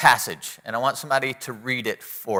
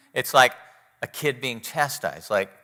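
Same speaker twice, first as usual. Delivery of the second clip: ordinary talk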